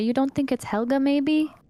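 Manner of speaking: whispered in a character voice. Repeating a line that cut out, whispering in character. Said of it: "I whisper, I say".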